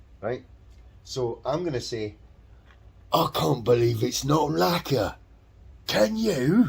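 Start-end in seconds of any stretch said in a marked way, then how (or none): 3.1-6.7 put-on heavy Cockney accent, laid on thick, loud, high. Giving his own version of the quoted line, doing a Michael Elphick Cockney impression. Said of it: "really thick Cockney accent".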